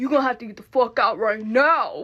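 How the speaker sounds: acted, buffed-up, loud, menacing tough-guy voice. Retelling how a woman got mad and stood up, imitating a tough, buffed-up woman. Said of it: "She gets like all buff".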